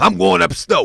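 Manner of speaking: put-on talking like an old uncle. Doing a bit about uncles in hoodies, imitating an old-school uncle. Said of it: "I don't know if they talk like that".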